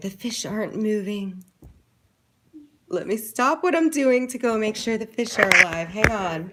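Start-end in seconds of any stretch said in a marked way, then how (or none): 0.0-1.4 put-on whisper, pitched higher. Retelling what Noah said after fixing the fish tank: imitating Noah whispering. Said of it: "he's, like, whispering".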